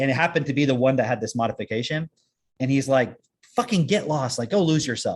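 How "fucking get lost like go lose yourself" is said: angry emotional outburst with hard emphasis. Telling how an engineer got upset at a robot: imitating someone yelling. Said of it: "he starts yelling at it".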